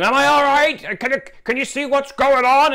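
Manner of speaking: very high, loud yelling. Retelling backing a trailer into a campsite: retelling own yelling. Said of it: "And then I would start yelling".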